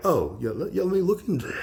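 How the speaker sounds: put-on calm British voice. Describing someone as British and spy-like, the speaker does a calm British impression of Lamb. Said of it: "very, very like calm and just".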